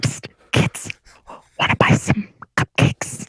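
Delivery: unsettling, creepy lurking-stranger tone. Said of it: "stop being creepy".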